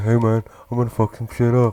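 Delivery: put-on dog voice. Voicing the dog General when it wrecks things, Shaq-like voice. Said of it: "that's the same voice to give to my dog".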